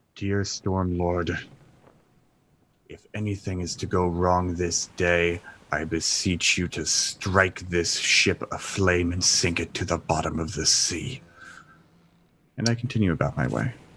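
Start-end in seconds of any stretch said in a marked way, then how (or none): 0.2-11.2 muttered under breath, much slower. A player character on a ship, speaking muttered under breath. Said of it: "mutter under my breath".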